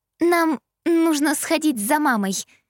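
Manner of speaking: pitiful, plaintive, high little squeaky voice. Trying not to give someone away to her father, in a plaintive squeak. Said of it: "жалобно пропищала я".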